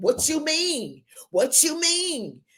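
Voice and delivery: acted, very high, drawn-out, swooping angry voice. Acting out someone reacting to a compliment: imitating someone getting mad.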